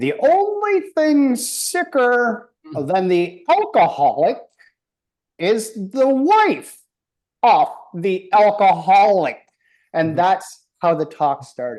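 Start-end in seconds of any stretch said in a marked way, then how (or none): 0.0-9.4 put-on sermon voice, very slow, with swooping pitch. Recalling what was heard every Wednesday, doing a Father Martin voice. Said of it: "I'll try to do a Father Martin voice".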